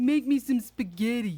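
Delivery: put-on high Italian accent. Describing a character in a movie from the eighties, in a stereotypical italian accent. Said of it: "he sounds exactly like you would think of a stereotypical".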